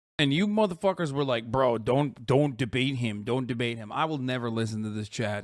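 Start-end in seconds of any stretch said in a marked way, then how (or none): none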